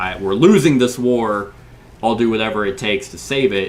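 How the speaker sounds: plain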